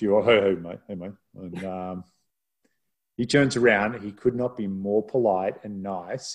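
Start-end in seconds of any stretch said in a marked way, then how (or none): 0.2-1.1 put-on deeper voice. Recalling walking straight up to a man to greet him, retelling a deepened voice. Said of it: "deepen the voice".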